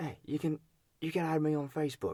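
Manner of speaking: put-on high-pitched Australian accent. Quoting a man from a story, as the co-speaker suggested; Australian accent. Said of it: "you gotta try an Australian accent".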